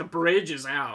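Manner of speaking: ordinary talk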